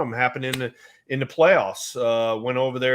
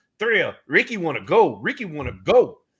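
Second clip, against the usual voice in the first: high, impatient voice with swooping, swinging pitch; 5 semitones higher, 3 dB louder than usual. Retelling Ricky getting mad at the hold sign: imitating Rickey Henderson getting mad. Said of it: "he's getting mad".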